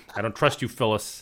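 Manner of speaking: ordinary talk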